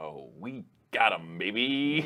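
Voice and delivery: said fully out loud, very slowly. Gloating that a friend has been won over: said super out loud. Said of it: "You say that super out loud".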